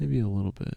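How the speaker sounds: barely-there, very quiet mumble. Answering whether the voice is too quiet: talking very quietly. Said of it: "now you're really talking too quiet".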